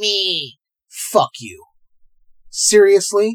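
angry and serious. Telling off people who review bomb movies: angry and serious. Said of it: "You can hear it in my voice?".

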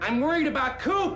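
very loud, high-pitched hollering shout. Quoting what he so succinctly put: Gordon Cole impression. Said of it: "That was a great impression".

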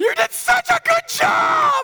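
loud, slow, high-pitched praising.

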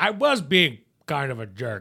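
loud, high, exasperated outburst. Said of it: "he almost tells him like he's, like, exasperated".

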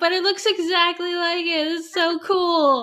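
gushing, excited voice. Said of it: "And I'm like".

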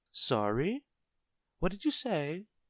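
very high, swooping, put-on voice feigning confusion. Narrator reads the shopkeeper's reply to a booming customer, pretending not to hear. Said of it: "pretending not to hear".

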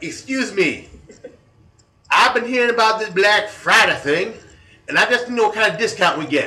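high, loud, mock dialect imitation voice.

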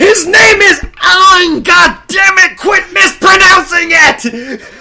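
very high, very loud, pent-up yell. Retelling holding in anger through a film, then reenacting own yell. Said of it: "I yelled when it was over".

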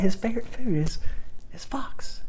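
high-pitched, secretive, conspiratorial whisper.

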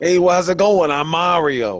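put-on Brooklyn accent. Imitating Mario from the old cartoon show, in a stereotypical Brooklyn accent. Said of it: "He just has like a stereotypical New York Brooklyn accent".

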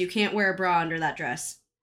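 ordinary talk, nothing marked

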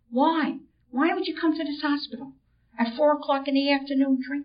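whispered. Retelling what a sister asked at the hospital: imitating a whisper. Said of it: "And in a whisper, she says to me".

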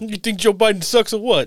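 put-on thick New York accent, very high pitch. Mocking Newsmax's roving reporter in the Bronx, as a roving reporter with a thick accent. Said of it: "their roving reporter with the thick accent".

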